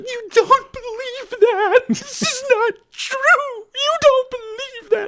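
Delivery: play-acted very high, slow, drawn-out tearful crying. Retelling how mom, horribly crying, answered a child's remark: imitating mom crying horribly. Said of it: "my mom immediately breaks down crying, like, horribly crying".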